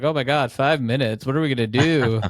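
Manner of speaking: acted, amused, joking tone through laughter. Retelling how contestants reacted to a short time limit: imitating laughing contestants. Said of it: "laughed, like".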